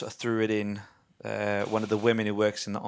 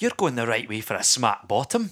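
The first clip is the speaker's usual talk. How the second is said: loud, booming ogre voice with Scottish accent; 5 dB louder than usual. Asked to do it again, the speaker repeats a Shrek impression. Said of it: "Do it again".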